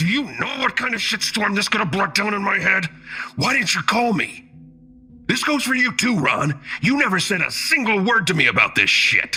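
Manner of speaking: snarl through gritted, clenched teeth. Narrator reads a man confronting two others over a threatened accusation, snarling through gritted teeth. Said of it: "Through gritted teeth, he snarled".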